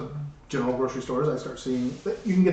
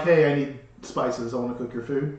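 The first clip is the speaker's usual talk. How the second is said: ordinary delivery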